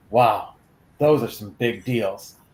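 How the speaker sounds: mock solemn, dead-serious, earnest tone. Quoting a son's comment on a Target ad: mock-serious tone. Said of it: "my son looks over at me in all seriousness".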